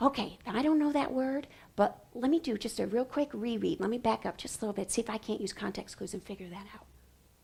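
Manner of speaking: unvoiced, very soft whisper. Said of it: "I whisper".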